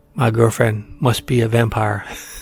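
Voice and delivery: put-on strong Spanish accent. Retelling what a woman said to him, in a strong spanish accent. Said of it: "in a strong Spanish accent".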